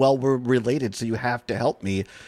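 ordinary delivery

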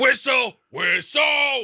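high-pitched, loud yell. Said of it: "a little too loud for folks out there".

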